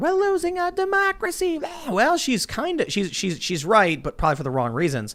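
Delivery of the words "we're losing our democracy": high-pitched mock scream. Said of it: "the woman screaming into her phone".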